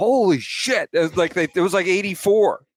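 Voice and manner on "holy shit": put-on sudden, startled, shocked exclamation shout. Retelling a reaction to a fast pitch in a batting cage: imitating own shout. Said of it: "I shouted".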